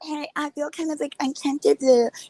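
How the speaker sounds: mock-innocent soft voice. Retelling what a woman said to a man, mocking a fake soft innocent voice. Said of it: "She uses this like fake, soft, innocent voice".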